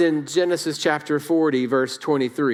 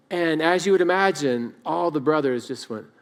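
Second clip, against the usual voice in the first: ordinary talk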